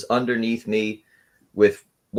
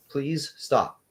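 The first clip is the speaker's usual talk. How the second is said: tiny, small, soft pleading voice; 4 semitones higher, 5 dB quieter than usual. Retelling what a guy said during a fight, imitating a small voice. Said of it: "he said in a small voice".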